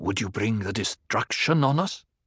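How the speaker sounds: sharp, hissing voice. In the circle, someone nudges Paul with an elbow and speaks to him, hissed. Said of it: "a voice hissed".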